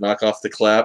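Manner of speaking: ordinary talk, nothing marked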